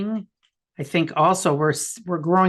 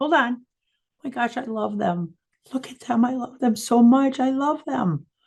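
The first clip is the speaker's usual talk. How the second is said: slow, high voice on the verge of tears; 8 semitones higher than usual. Imagining God speaking about someone annoying, tearing up. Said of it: "I'm tearing up".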